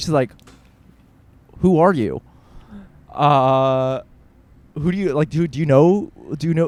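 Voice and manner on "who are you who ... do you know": very mean, nasty, hostile tone. Retelling how a woman answered the doorbell: imitating a very mean tone. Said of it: "answers in an incredibly mean tone".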